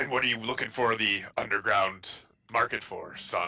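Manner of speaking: gruff, rough-edged voice. A storyteller voicing a character who looks at you, speaking rather gruffly. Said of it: "but rather gruffly, uh, goes".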